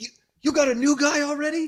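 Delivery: very high, squeaky, incredulous squeal.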